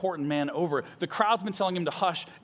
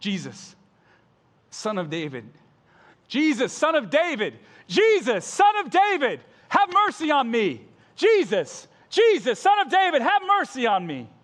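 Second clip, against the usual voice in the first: loud desperate shouting, rising and building each time; 7 semitones higher, 7 dB louder than usual. Retelling how an overlooked man calls out to jesus, acting out a shout. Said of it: "He shouts out all the more".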